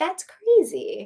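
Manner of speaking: calm delivery with pitch lifted. Praising how Mia reacted on Summer House, imitating Mia, mock-calm. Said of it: "getting to the point without yelling".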